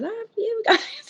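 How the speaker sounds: screeching, very high-pitched screaming yell. Retelling screaming at the producers: imitating own past screaming. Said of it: "screaming at the producers".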